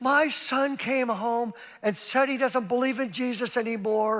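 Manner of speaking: high, tearful put-on sobbing through every word. Retelling a mother crying in the speaker's office about her son, imitating someone crying. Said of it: "she's crying and crying and crying".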